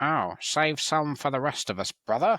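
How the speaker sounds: high, prissy, posh-sounding, poncy put-on voice. Comparing this guy's Space Marine voice to darker ones, imitating a poncy voice. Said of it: "he sounds really poncy".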